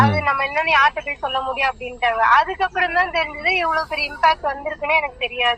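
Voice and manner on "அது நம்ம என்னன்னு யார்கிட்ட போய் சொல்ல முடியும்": usual speaking voice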